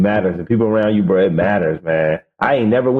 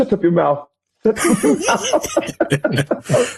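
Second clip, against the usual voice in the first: scolding voice, very high pitched and very slow, drawn out; 13 semitones higher than usual. Retelling how parents answer an explanation: imitating nigerian parents. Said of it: "your parents and they would".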